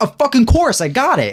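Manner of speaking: sudden, very high, excited shout. Retelling how a game character answers a request: imitating Kat shouting excitedly. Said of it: "shouts at them, like, randomly".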